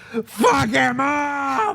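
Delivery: high, slow yell.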